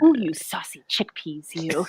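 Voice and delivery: erotic, seductive reading, very low and soft. Recalling how she read a recipe about soaking chickpeas, in a mock-erotic reading. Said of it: "I read it in an erotic way".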